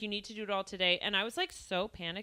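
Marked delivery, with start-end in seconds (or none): 0.0-1.0 put-on pushy, insistent tone. Retelling what a dentist who was pushing said: imitating a pushy dentist. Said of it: "was pushing".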